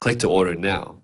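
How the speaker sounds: usual speaking voice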